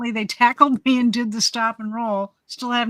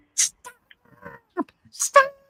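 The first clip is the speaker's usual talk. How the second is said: high, panicked, freaking-out cries. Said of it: "she's just freaking out".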